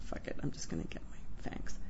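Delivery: low, whispered mutter.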